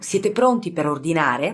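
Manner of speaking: plain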